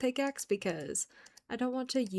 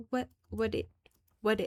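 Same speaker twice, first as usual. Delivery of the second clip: put-on little kid's babbling toddler-style voice. Playing a modded game with no clue what the items are, imitating a toddler. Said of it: "trying to do an impression of like that one kid who is like a toddler".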